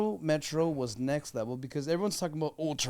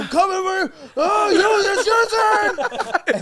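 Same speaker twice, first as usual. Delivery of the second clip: shrill, booming, very high, very loud, drawn-out scream; 13 dB louder than usual. Retelling own soccer defense, imitating own past screaming. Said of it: "screaming every time I'm running toward him".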